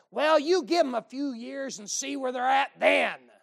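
put-on crotchety, cantankerous old-timer voice. Retelling what someone in the back said, in a crotchety old person voice. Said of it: "some crotchety old person in the back go".

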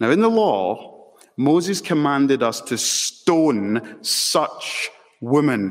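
slow, drawn-out, disdainful, scornful tone.

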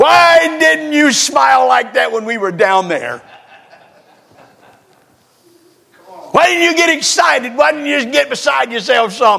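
pretend yelling. Picturing meeting a listener in the rapture, calling over: pretend yelling. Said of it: "I'm gonna yell over at you".

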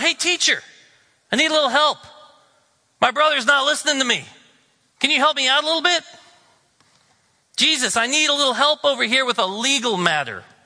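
high, loud yell, calling out. Retelling how someone in the crowd called out to jesus, retelling a man's yell. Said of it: "Someone yells out".

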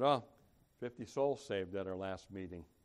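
very low, bored, flat, under-emphatic, yawning voice. Mimicking an under-emphatic report about a meeting: imitating a bored, yawning report. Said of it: "They almost say it with a yawn. ... with a very under-emphatic".

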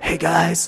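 put-on raspy, rough voice. Imitating how speakers at men's conferences talk: imitating a raspy voice. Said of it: "It's really, like, raspy".

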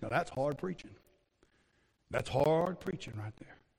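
very quiet attempted put-on Louisiana accent. Quoting a phrase a man used to say, in an attempted louisiana accent. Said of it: "as best you can in a Louisiana accent".

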